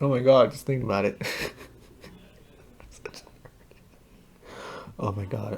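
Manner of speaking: speaking through tears. Watching a trilogy of videos on camera, crying while talking. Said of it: "I'm literally crying".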